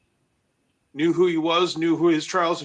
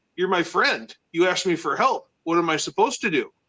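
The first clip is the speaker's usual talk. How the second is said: usual speaking voice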